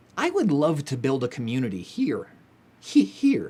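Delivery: voice catching, cracking, breaking mid-line. A youtuber speaking to viewers of their videos, voice cracking. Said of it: "I don't know why my voice is cracking".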